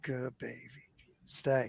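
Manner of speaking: very soft and low, almost half-whispered. Retelling talking to a scared beagle: retelling an almost-half-whisper. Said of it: "I lowered my voice, and it was almost a whisper".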